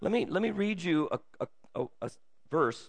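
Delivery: stammering, stuttering, halting delivery. Talking about following god, the speaker offers to read a verse: stuttering. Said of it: "I'm stuttering".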